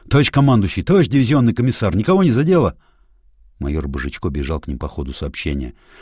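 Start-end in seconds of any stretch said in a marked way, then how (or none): 0.1-2.7 anxious, alarmed, loud, high-pitched shout. A major runs toward his commanders after explosions, alarmed call. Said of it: "тревожный зов Божичко".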